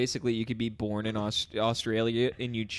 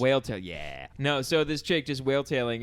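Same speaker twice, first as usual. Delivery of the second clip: ordinary talk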